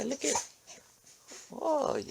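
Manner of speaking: high, soft cooing in pet-talk voice.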